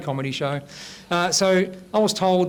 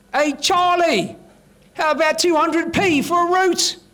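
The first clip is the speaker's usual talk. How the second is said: high, slow calling out. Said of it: "she yells out".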